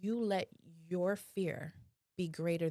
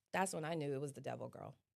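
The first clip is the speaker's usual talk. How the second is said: plain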